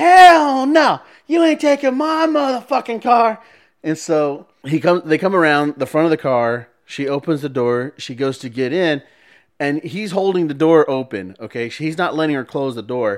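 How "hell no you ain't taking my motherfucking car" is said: shrill, very high, drawn-out top-of-the-lungs shriek. Retelling a woman coming out of a hotel: imitating a woman screaming. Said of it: "she's just at the top of her lungs".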